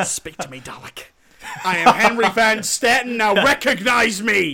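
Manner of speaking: booming, high-pitched declaiming. Imitating a villain from the episode Dalek, Henry Van Staten impression. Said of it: "why did you say it like he says it?".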